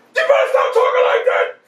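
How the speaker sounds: imitated screaming. Retelling a father yelling from upstairs: imitating a father screaming. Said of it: "my father screamed from the second floor".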